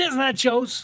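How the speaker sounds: put-on sassy voice. Repeating a dinner joke about nachos: put-on sassy accent. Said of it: "with the accent and the sass that you put on it".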